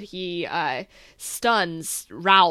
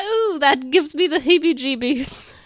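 put-on tiny old lady voice, higher and louder; 9 semitones higher, 6 dB louder than usual. Repeating the childhood line again: little mini old lady voice. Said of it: "The little mini old lady".

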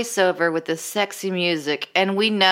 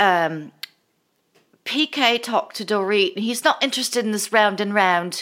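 fake, put-on, affected British accent; 3 semitones higher than usual. Retelling what a woman said, imitating her fake British accent. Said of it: "this fake accent this time".

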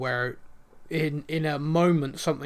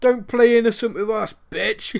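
mock menacing tone, higher and louder; 7 semitones higher, 7 dB louder than usual. Retelling characters laying into an old lady on the phone: imitating someone threatening. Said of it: "laying into her".

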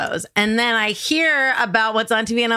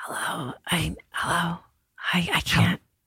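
put-on whisper, lower and quieter; 4 semitones lower, 7 dB quieter than usual. Imitating a hostage's nine one one call: imitating a whispered hostage call. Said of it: "Nine one one calls where you're being held hostage and have to whisper".

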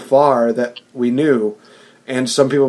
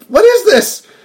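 very high, tiny, squeaky little voice; 7 dB louder than usual. Complaining about a villain's new voice, imitating it high-pitched and little. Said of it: "high-pitched little voice. Like".

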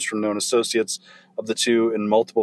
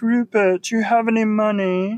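very high, thin, wispy, whiny voice; 11 semitones higher than usual. Recalling how Andy talked, quoting him in a wispy, whiny Andy voice. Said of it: "He had like a weird, wispy, whiny voice".

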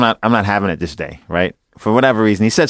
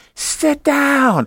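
put-on very high, sharp yell. Retelling how a cousin yelled out in the movie theater: imitating someone yelling. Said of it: "she yells".

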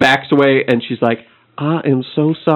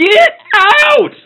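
shrill, high, exasperated shout; 5 dB louder than usual. Voicing a bar owner at wit's end ordering someone out: at wit's end, yelling. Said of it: "she is fucking at wit's end".

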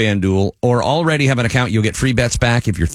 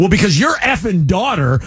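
heated, pitched-up, pissed-off angry tone; 8 semitones higher than usual. Retelling a phone call with mom: imitating own angry retort. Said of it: "she said something that got me pissed, and I go".

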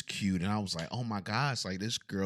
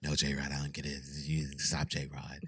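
mock deep, sultry woman's voice, lower, quieter; 6 semitones lower, 5 dB quieter than usual. Retelling a woman's reply to him, imitating her deep sultry voice. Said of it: "She had this real deep yeah. and sultry voice".

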